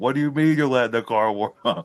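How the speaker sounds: mock heated yell, mild and high-pitched. Retelling a movie scene after a killing, imitating Joe Pesci yelling. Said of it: "he's yelling at him".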